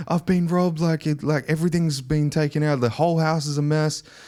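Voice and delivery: frantic, high, panicked outburst. Retelling a call in which a robbed friend spoke: imitating someone panicking. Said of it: "she's, like, in some panic".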